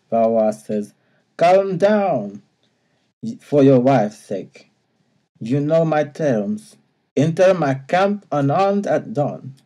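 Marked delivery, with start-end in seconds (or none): 1.3-9.4 over-the-top comedy fake French accent. Reading out Valois's reply in the story: Monty Python French accent. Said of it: "I can't help but do the Monty Python thing".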